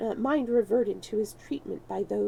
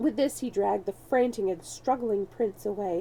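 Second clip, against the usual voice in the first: ordinary delivery, nothing marked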